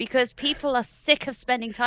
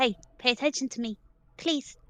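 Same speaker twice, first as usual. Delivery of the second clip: quieter, put-on little cat voice; 5 dB quieter than usual. The speaker imitates Kayla for the other person: imitating Kayla's little cat voice. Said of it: "She sounds like a little cat".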